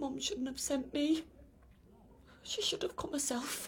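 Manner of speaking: tearful voice. A man recalls lying paralysed on the kitchen floor for two days, crying. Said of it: "Now you're crying".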